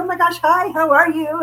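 high, loud, eager, gushing, acted out. Retelling answering a call from Jesse's mom, reenacting own excited greeting. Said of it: "So I got real excited".

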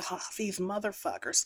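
very soft, quiet words sighed under the breath. Retelling how Celine reacted to hearing Jack never existed: imitating a sigh. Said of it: "not gasp, but sigh".

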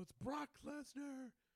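very high-pitched, loud announcer-style shout. Retelling how a wrestler shouted his own intro, Paul Heyman style intro shout. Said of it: "he sounded like Paul Heyman".

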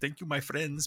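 put-on Italian accent. Showing how a guy's written messages read, the speaker uses an italian accent. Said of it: "c'est mon accent italien".

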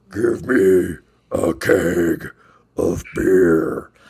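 put-on wolf voice. Recalling a social gathering, trying the line in a wolf voice. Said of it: "in the wolf voice, you know, and I'm going to try to do my best here".

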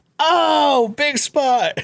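put-on shrieking, very high screamed voice. Acting out how he screams his head off while reacting to stuff, imitating someone screaming. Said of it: "just him screaming like".

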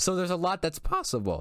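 voice breaking and cracking up high. Talking with another speaker about what is possible, voice cracking. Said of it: "Voice crack, by the way".

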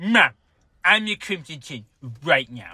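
put-on whiny cartoonish boy voice. Mocking how the other speaker sounded, in a Cartman voice. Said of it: "You sound like just like a guy named Cartman going".

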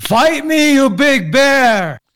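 very slow, high, drawn-out, full-throated scream at full volume. Playing a character in a game, challenging a bear: screaming at the top of lungs. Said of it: "scream at the top of my lungs".

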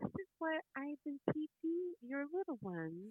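soft, kind put-on tone. Comparing how two teachers talked to parents, imitating Mrs. A's gentle voice. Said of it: "in a gentle, kind voice".

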